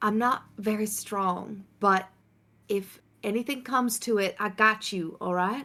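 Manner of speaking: hushed whispering voice. Speaking in character to a companion, pointing at home: whispering. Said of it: "I'm just gonna whisper to you".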